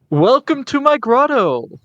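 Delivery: voice booming out, very high-pitched. Narrating a game, a voice greets the players entering a cavern: booming voice. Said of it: "a voice booms".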